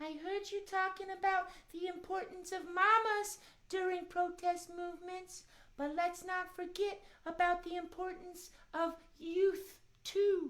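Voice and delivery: put-on mouse voice. Talking with another speaker about protest movements: Miss Mousie voice. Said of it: "Miss Mousie".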